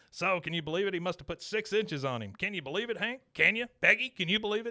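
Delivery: machine-gun-fast, high-pitched, rapid-fire chatter. Retelling a TV scene where Dale pipes up: rapid-fire Dale Gribble voice. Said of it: "he's like a machine gun".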